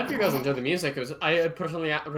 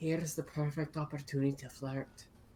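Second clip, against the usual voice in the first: hushed whisper, quieter; 9 dB quieter than usual. Voicing a character leaning over to another, speaking in a very quiet voice. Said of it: "in the quietest voice he thinks will stop Noname from hearing".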